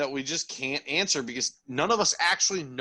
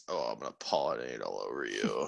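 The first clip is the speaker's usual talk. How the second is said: very low, deep, creaky voice; 7 dB quieter than usual. Urging another speaker to copy the line in a Buffalo Bill voice. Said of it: "in that Buffalo Bill voice".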